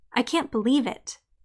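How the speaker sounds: usual speaking voice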